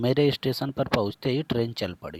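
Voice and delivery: whole sentence in one unbroken breath, no pauses. Hindi grammar lesson on compound sentences, example read with no pause inside the sentence. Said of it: "मैं रुक नहीं रहा हूँ".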